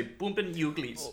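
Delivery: put-on German accent. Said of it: "or as the Germans would say".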